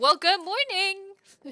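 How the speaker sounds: booming, very loud, high voice. Greeting someone who says they just woke up: a little loud. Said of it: "that was a little loud".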